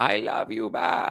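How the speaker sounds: slow, put-on Mexican accent. Reading out a viewer's message, then answering: Kamala Harris Mexican accent. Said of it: "in my Kamala Harris Mexican accent".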